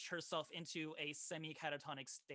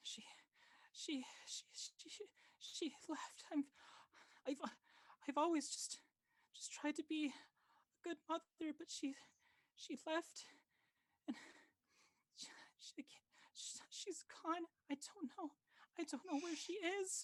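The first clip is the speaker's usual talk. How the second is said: very high, stammering, sobbing, pitiful whimpering; 13 semitones higher than usual. Voicing a mother who lost her girl: pitiful whimpering. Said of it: "her sobbing turns into this really pitiful, um, whimpering".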